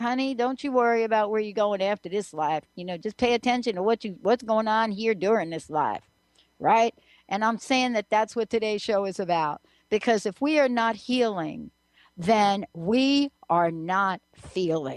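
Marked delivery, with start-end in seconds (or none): 0.0-6.0 put-on stretched-out southern accent. Speaker quotes a woman's advice about this life; southern drawl. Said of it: "with that southern drawl. She'd be like".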